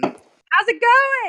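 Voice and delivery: very loud, high-pitched, chattering voice. Greeting a hungover companion slumped on a sled: talking very loudly. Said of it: "I'll be talking very loudly next to him".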